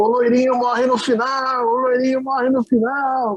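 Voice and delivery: very high, carrying shout. Retelling a man leaving the cinema who yelled at the queue, imitating a man yelling. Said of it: "ele começou a gritar na fila assim".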